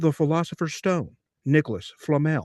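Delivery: preaching sermon voice, like from the pulpit. Retelling a sermon about Harry Potter: imitating Stephen Dollins. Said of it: "That's a really good impression".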